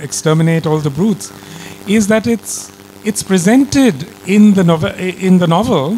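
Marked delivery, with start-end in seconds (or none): none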